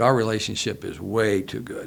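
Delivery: plain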